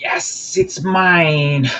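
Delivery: high cackling villain voice, laughing, mine stretched out. Game narrator voicing a character seizing the sword, cackling and laughing. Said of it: "he he cackles and laughs".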